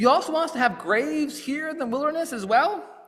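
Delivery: high-pitched, sarcastic, jabbing tone. Retelling what the Israelites say to Moses: imitating a sarcastic retort. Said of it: "the first things out of their mouth is sarcasm".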